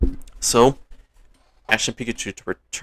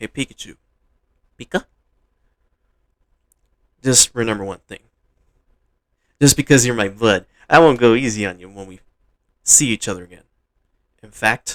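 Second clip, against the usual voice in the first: plain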